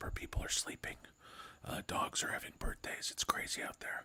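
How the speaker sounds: whispered voice. Speaker greeting listeners while people nearby are sleeping; whispering. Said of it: "I have to whisper".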